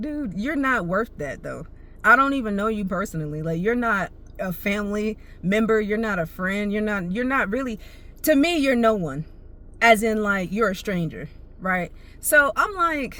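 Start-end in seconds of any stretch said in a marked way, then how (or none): none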